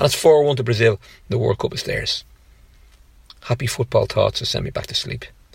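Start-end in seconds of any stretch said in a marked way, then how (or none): none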